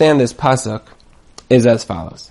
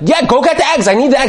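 mad, angry, pitched-up voice; 9 semitones higher than usual. Acting out a wife mad about the forgotten eggs: imitating a mad wife. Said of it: "She gets really, really, really mad".

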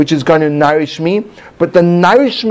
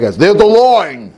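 put-on, tried-out Brooklyn accent. Speaker showing how a phrase might sound in a Brooklyn accent. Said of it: "in saying a Brooklyn accent".

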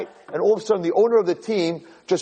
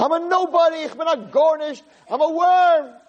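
very high-pitched, drawn-out screaming cry; 11 semitones higher than usual. Retelling a joke about a man in shul: imitating someone screaming. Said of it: "he starts screaming".

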